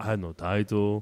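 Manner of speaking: put-on wrestler voice with a foreign accent. Retelling a wrestler's promo, imitating Rusev's accent. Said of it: "too much of an accent".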